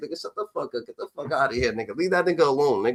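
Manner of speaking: words pushed out through laughter. Retelling how they answered the others at school: reenacting own laughing reply. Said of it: "I just start laughing like".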